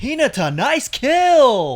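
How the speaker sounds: very high, loud, heavily over-enunciated delivery. Describing how the Haikyuu English dub delivers a line: Haikyuu English dub voice. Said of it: "when they over enunciate".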